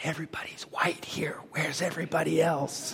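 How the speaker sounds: put-on soft, breathy whisper like a small boy.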